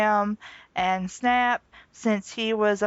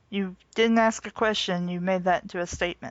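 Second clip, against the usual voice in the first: plain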